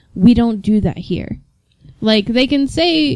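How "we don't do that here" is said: ordinary talk, nothing marked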